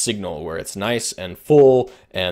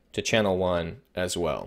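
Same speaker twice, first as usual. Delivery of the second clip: usual speaking voice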